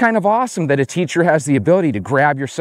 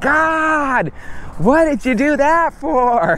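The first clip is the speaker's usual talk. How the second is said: whiny, complaining, drawn-out moan, very high; 10 semitones higher than usual. Retelling a pepper-sprayed teacher's complaint, imitating a whining, complaining voice. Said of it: "had a perfect whining, complaining voice".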